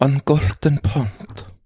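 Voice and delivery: Icelandic accent on every word. Trading accents on a podcast, answering the Icelandic request: Icelandic accent.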